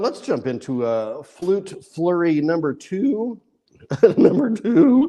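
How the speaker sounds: voice cracking. Performer announcing the next piece, voice cracking. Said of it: "My voice is cracking".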